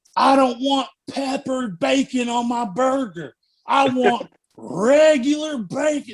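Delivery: put-on screeching, high, very slow, every word dragged out. Retelling a drive-thru customer's complaint: imitating a woman screaming. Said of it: "she's just screaming".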